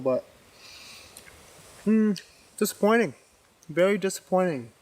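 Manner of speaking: speaking mid-chew, mouth still full of food. Reviewing a store-bought sirloin steak while eating it, talking with a mouthful. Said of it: "I know I'm talking with a mouthful".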